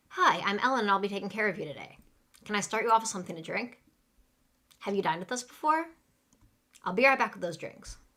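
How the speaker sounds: fast, hurried, rattled-off server patter. Demonstrating a server's greeting for listeners to catch, said really fast. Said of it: "say them really fast".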